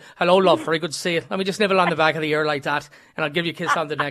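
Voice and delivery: Scots brogue accent. Speaking to Mary, who wants to hear his brogue, Scottish brogue. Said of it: "want to hear my brogue and my Scott brogue".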